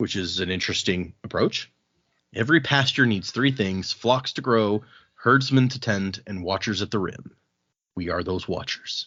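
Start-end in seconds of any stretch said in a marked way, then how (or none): none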